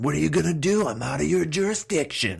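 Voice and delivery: acted shout, pitched way up, high and shrill. Retelling own past yelling at security guards: imitating own past yell. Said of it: "And so I even yelled, like".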